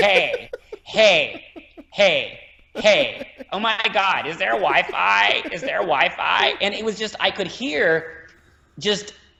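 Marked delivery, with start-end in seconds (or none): 0.0-6.5 imitated, forced throaty North American women's voice, higher. Imitating North American women walking by: forced throaty North American women's voice. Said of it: "they were forced into their throat".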